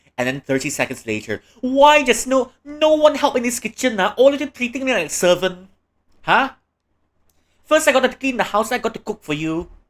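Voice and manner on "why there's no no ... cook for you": shrill, very high-pitched scolding yell. Acting out a mum who complains nobody helps: imitating a mum yelling. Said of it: "And now you're yelling at me".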